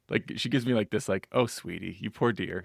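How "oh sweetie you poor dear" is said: acted, patronizing tone, talking down with pity. Retelling how someone looked at the speaker: imitating a pitying look. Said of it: "she looks at me like".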